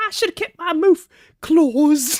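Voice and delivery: put-on British accent. Mocking how British people talk: imitating a British accent. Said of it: "and then they talk like this".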